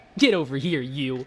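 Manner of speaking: charming, playful, cutesy voice. Redoing a catchphrase as a charming cutesy version. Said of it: "Like a really just charming".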